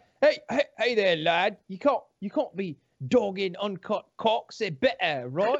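mock British accent, put on. Reading out a message from someone in a put-on British accent. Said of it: "I'm going to give them a British accent".

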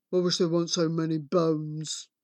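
low, soft, grumpy giant mutter. The giant mutters after eating, in grumpy tones. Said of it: "and this is in grumpy tones".

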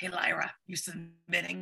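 gruff, throaty, rough casual voice. Retelling a conversation, imitating Ariel Sinclair's gruff voice. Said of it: "I love her voice. It's so gruff".

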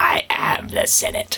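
slow, breathy, sinister put-on movie-villain whisper. Discussing a Star Wars scene, quoting the character in the Emperor Palpatine voice. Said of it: "that Emperor Palpatine voice".

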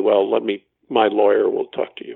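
ordinary talk

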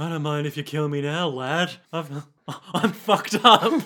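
soft-spoken, lulling, languid voice. Retelling a character's line, she says with hooded eyes: imitating a soft voice. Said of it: "soft voice".

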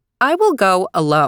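ordinary delivery, nothing marked

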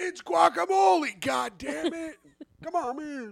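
acted, very high, drawn-out ranting scream. Acting out show listeners yelling at their devices, imitating people screaming. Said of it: "people were screaming at their devices".

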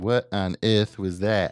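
attempted, put-on Australian accent. Repeating a witness's words for a listener to judge, in an Australian accent. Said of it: "That's my Australian accent".

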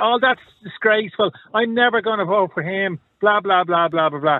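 mock griping moan. Mimicking women complaining online about a councillor: imitating women moaning. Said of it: "Women moaning".

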